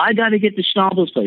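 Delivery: frantic, insistent shriek, very high. Recounting being told no, the speaker acts out screaming insistently. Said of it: "and then I'm like screaming".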